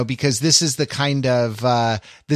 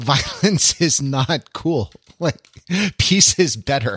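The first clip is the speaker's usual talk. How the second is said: slow speech through exasperated laughter; 2 semitones higher than usual. Explaining that violence is not cool, laughing in exasperation. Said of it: "I'm laughing out of exasperation".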